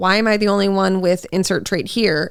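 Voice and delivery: ordinary talk, nothing marked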